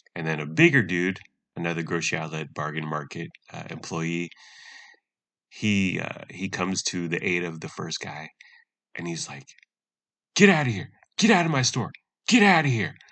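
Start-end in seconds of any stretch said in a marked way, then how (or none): 10.3-12.9 very loud, very high bellowing yell. Retelling a store employee ordering someone out of the store, retelling a yell. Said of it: "they're both yelling".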